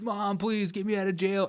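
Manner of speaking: put-on high, strained, begging half-scream. Imitating people screaming at their parents from jail: imitating someone screaming. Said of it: "They start screaming at their parents".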